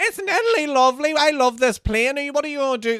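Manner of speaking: loud, high fake Italian accent at top volume. On a plane, the speaker and a mate shout at the top of their voices: retelling shouting in fake italian accent. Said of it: "that bullshit accent".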